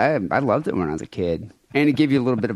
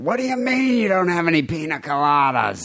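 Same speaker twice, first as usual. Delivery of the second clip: high-pitched, indignant, furious comic outraged rant; 6 semitones higher than usual. Acting out a demand at a bar: Gilbert Gottfried voice. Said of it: "Gilbert Gottfried".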